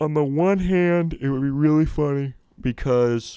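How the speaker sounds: talking through a loud yawn. Recording at midnight, discussing the draft, talking through a yawn. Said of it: "Sorry, I'm yawning".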